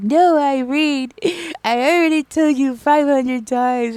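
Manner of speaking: mock emotional, tearful, loud, high crying outburst. Retelling an argument with Irene over sugar: imitating own past crying. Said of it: "I started crying 'cause I was like".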